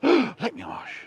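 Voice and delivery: very high, loud, feigned astonished surprise. Showing how to use the phrase to feign surprise: feigned surprise. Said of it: "to feign surprise".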